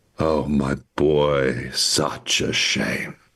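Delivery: close, leaning-in stage half-whisper. As a character leaning close to the player's ear, half-whispering into ear. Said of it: "leans close and whispers into your ear".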